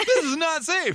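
put-on celebrity voice, pushed very high. Repeating a line while laughing: Seth Rogen impression. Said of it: "my Seth Rogen impression".

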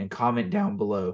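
voice cracking and breaking mid-phrase. Closing a podcast, asking listeners to comment, voice cracking. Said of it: "bad voice crack".

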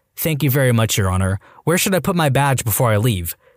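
ordinary delivery, nothing marked

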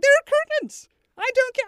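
shrill, very loud, high shout through laughter. Retelling a screaming match over curtains, retelling a yell while laughing. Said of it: "I'm yelling and laughing".

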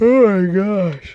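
high, stretched-out words pulled through a yawn. Podcast host talking on air, yawning. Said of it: "I yawn. I'm sorry, yawn".

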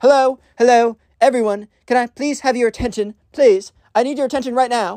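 put-on bratty kid voice. Retelling a school story, imitating a spoiled kid on a microphone. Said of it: "what the spoiled kid does is he goes up to the podium".

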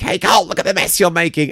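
put-on full-on shrill, high-pitched screaming. Retelling screaming at a stage partner over his mess, re-enacted screaming. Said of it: "I'm screaming at him".

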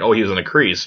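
ordinary delivery

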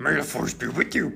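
high, creaky, raspy voice. Showing off voices after being praised for them, doing a Yoda voice. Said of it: "I can do Yoda".

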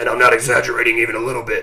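loud, gruff superhero voice. Describing how the actor talks when he plays Batman, in a Batman voice. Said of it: "he talks like this".

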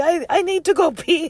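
put-on top-of-the-lungs child's scream, very high, drawn out. Retelling how a loud friend shouted during the service, imitating Jim Boy screaming. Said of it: "like screaming at the top of his lungs".

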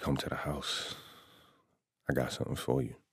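whispered, breathy, seductive woman's voice. Retelling an invitation from a woman, imitating a lady's sexy voice. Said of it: "that was my sexy voice lady sexy voice".

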